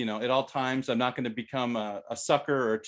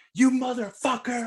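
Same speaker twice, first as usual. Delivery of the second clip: very high, shrill, furious screaming; 12 semitones higher, 4 dB louder than usual. Retelling being cut off on the freeway, retelling own scream. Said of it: "I'm screaming out the window".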